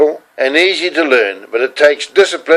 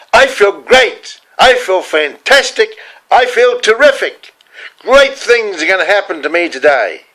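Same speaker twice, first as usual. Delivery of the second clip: big, loud, pitched-up declaring tone; 5 semitones higher than usual. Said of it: "in a big loud voice".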